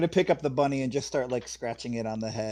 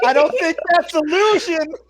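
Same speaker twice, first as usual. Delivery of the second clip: loud, high, shrill hysterical laughing through words; 9 dB louder than usual. In character during the game, the player speaks while laughing hysterically. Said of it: "I am in character laughing hysterically".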